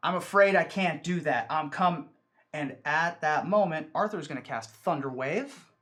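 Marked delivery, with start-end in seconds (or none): 0.0-2.1 loud, booming man's voice calling out. In a tabletop game scene, a voice is heard refusing a visit: loud male voice. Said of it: "you hear the loud male voice say".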